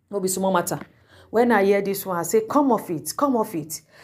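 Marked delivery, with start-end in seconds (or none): none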